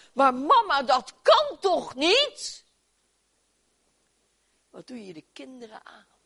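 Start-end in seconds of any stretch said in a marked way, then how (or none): 0.2-2.7 very loud, swooping, outraged, indignant cry. A speaker retells a girl crying out to her mother: retelling an indignant outcry. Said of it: "ze riep verontwaardigd".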